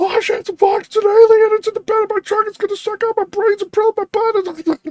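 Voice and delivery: frantic, terrified, high-pitched babbling scream. Speaker acting out their imagined 911 call about something in their truck, mock screaming. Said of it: "I'd be screaming".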